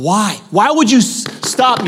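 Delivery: deeply upset woman's voice, put-on Russian accent. Retelling a woman told not to pray in tongues, imitating her upset. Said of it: "so upset".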